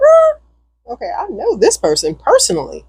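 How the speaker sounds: surprised, sudden high-pitched "er", then even.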